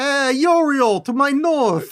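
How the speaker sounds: put-on Italian accent. Imagining a TV mob boss doing an occult ritual, in Tony Soprano Italian accent. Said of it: "I wish I could do an Italian accent".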